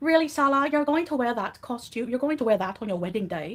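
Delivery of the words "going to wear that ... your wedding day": ordinary talk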